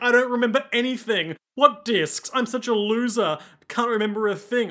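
high, weepy, blubbering crying voice. Retelling a scene where a character cries: imitating a character crying. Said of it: "he's crying".

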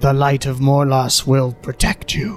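spider creature monster voice. A game master voices a spider on the ceiling noticing the party, in a spider creature's voice. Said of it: "you hear the voice sort of coming from it".

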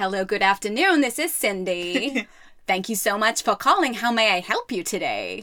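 bad put-on valley girl receptionist Californian accent. Retelling a phone call, imitating Cindy who answered, terrible Californian accent. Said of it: "Terrible accent".

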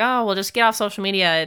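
put-on, dated, caricatured elderly voice. Speaker showing how they could sound dated, old person voice. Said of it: "this is my old person voice".

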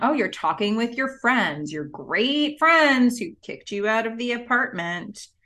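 put-on fast, biting, dripping sarcasm. Retelling what a man said when he showed up, mock-sarcastic. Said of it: "the sarcasm quickly leaves his voice".

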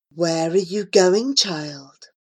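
mild, gentle, kindly tone. Reading a story, a figure on the path speaks to frightened Chinye in a gentle voice. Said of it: "asked a gentle voice".

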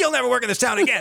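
fast, coarse, dismissive brush-off tone. Exaggerating how another person's remark to the other speaker came across, mock-coarse dismissal. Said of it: "That's what it sounded like".

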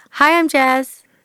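put-on American accent. Prompted by the other speaker to introduce themself, in an American accent. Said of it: "I'd love to hear your American accent".

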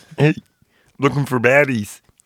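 put-on frog puppet character voice. Acting out a character in a story, in a Kermit the Frog voice. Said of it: "if you want to do the Kermit".

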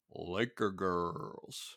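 grand, showy announcer-style voice. Recapping how an episode ends, in an announcer voice. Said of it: "let me do my best announcer voice".

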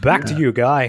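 bright, upbeat, cheery radio-host DJ delivery. Repeating another speaker's handoff to Guy: imitating a cheery radio handoff. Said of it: "It's like something you hear on the radio".

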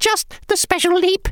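very high, squeaky little voice. Narrator reading a story, voicing the shrinking Scaries, squeaky Scaries voice. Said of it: "they squeaked".

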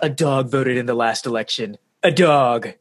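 slow, drawn-out, deeply upset voice. Retelling what Trump said in an interview: Trump impression. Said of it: "your Trump impression".

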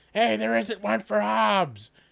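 very high, rasping, rough yell. Retelling a comic where a present is missing: imitating Calvin yelling. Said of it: "and he yells".

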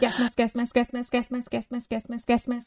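quick tongue-twister speed, rapid-fire repetition. Taking up a challenge to say a phrase ten times, saying it fast. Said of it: "Say that 10 times fast".

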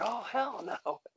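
very high, frantic, flipping-out outburst. Retelling a wrestler discovering his stolen wallet: imitating King Booker flipping out. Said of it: "he starts flipping out".

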